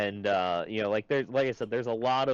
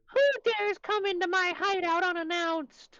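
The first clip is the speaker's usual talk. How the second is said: very high, goofy, silly put-on voice. Game master voicing a character who stares at intruders in his hideout, funny character voice. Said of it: "roll a grit check to not giggle when you hear".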